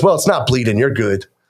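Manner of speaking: dismissive delivery with attitude. Retelling a barber's reply after cutting a lip, imitating someone with an attitude. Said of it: "So she's giving me this attitude".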